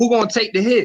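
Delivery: high, loud yelling. Retelling how he yelled back after a hit was put out: retelling his own yell. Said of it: "So I yell out".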